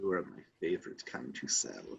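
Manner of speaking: very low, soft, hushed whisper. Voicing a woman who grabs and pets you, then whispers into your ear. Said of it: "and whispers into it".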